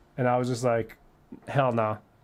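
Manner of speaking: usual speaking voice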